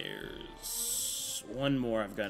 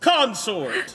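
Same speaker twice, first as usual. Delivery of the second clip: put-on game announcer voice; 13 semitones higher, 17 dB louder than usual. Announcing an enemy as another player asked: Smash Brothers announcer voice. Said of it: "announce them like a Smash Brothers announcer".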